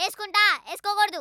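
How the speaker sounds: loud, rapid-fire, back-and-forth shouting.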